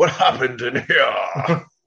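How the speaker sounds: slow, heavy, exaggerated British accent, stretched out.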